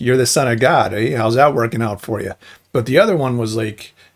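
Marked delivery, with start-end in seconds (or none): none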